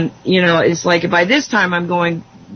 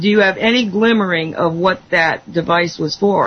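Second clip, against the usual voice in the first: plain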